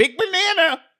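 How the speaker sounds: put-on nasal comedian voice. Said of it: "he has a nasally voice".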